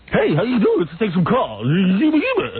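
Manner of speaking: mock silly radio-host voice. Imitating a rival radio host's gimmick voice on his morning show. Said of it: "He used to keep that voice up the whole time?".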